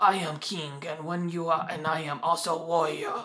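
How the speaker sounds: acted elderly man voice. Mocking an actor's accent in Hotel Rwanda, Don Cheadle's old-man accent. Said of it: "It was really like old man voice".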